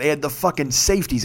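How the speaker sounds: plain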